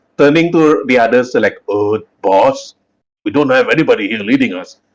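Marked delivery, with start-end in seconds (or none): 1.7-4.8 acted, mock-confused, puzzled orc voice. Recapping a story, the speaker acts out orcs left without a leader, acting out a confused orc. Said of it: "the orcs scratching their heads".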